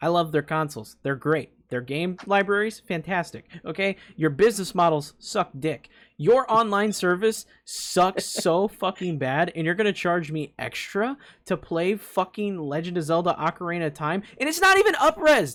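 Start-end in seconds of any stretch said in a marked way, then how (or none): 4.1-15.6 fuming, fed-up, angry ranting tirade. Ranting at Nintendo about its online service: angry yelling rant. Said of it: "I'm gonna yell at fucking Nintendo this week".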